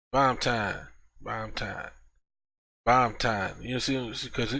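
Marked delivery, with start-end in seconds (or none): 0.1-3.5 put-on drawling Texas accent. Explaining how a name gets said, the speaker does imitating Jake's Texas accent. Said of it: "Jake have an accent. ... cause that's how they talk in Texas".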